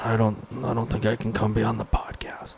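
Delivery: put-on half whisper. Retelling a man's reply to a podcast invite, retelling a half whisper. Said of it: "Half whispering, it sounds like".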